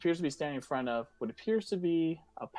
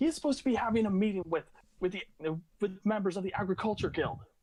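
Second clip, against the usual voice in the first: fuming, indignant elf woman voice, pitched up; 6 semitones higher than usual. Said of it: "she is pissed as all hell".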